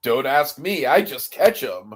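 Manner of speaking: put-on hint of annoyance. Recapping a scene where Superman catches a crane above a wedding: mock-annoyed Superman. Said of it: "a hint of like, God damn it".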